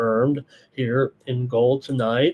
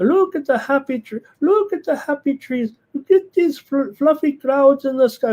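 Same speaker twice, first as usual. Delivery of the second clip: put-on German accent, pitched bright and high; 13 semitones higher, 3 dB louder than usual. Recalling a favorite painting show host, imitating Bill Alexander's German accent. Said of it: "with that German accent".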